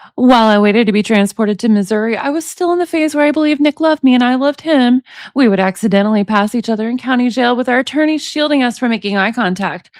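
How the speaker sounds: usual speaking voice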